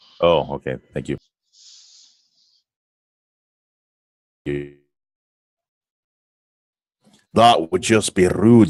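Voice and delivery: put-on horrible Scottish accent. Thanking another player during a game: horrible Scottish accent. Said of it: "horrible Scottish accent".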